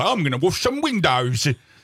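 showy, exaggerated Cockney accent. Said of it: "What was that accent".

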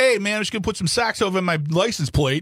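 put-on New Jersey accent. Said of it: "and I'll do the accent".

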